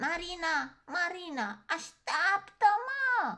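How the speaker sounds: breathless, panting shout, very high and loud. A little bear runs out of the house after the others, shouted, panting. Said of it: "A strigat el gâfâind".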